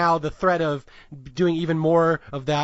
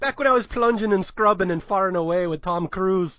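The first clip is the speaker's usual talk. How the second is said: fake Irish accent, a game attempt; 3 semitones higher than usual. Quoting a movie character faking an Irish accent: put-on Irish accent. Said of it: "I really hope that Irish accent was passable".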